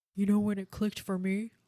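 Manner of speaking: edgy, snide, mocking smart-aleck voice. Imitating how the other speaker sounds when mocking: imitating someone's mocking voice. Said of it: "that's what you sound like".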